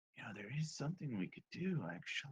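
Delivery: very quiet, hushed half-whisper. Voicing a character speaking in the middle of the night: half-whispering. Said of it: "whisper this to".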